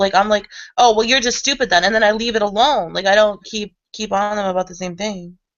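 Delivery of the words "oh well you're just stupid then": blunt, blatantly and openly rude tone. Acting out how they insult someone when coming after them: imitating blatant rudeness. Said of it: "blatantly being an asshole".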